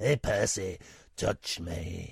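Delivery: low, put-on elderly woman voice impression. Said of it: "He sounds like Phyllis from".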